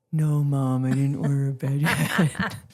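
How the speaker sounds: low, drawn-out drawling voice. A mother retells asking her son Jack about a bed, doing the Jack voice. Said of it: "you had to do the Jack voice".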